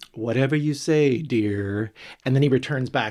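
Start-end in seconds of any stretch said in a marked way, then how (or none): 0.1-1.9 mock slow, bone-dry deadpan. Retelling a character's reply to a drunk man: imitating Judy's deadpan delivery. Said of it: "And she deadpans".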